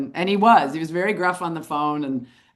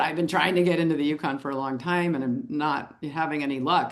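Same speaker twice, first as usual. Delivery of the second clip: ordinary delivery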